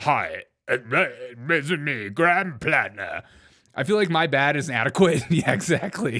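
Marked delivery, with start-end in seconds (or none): 0.0-3.2 very slow manly voice with drawn-out "this". Reacting to a video clip, mocking Graham Platner's manly voice. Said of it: "this is my manly voice".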